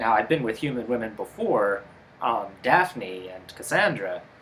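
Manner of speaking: ordinary delivery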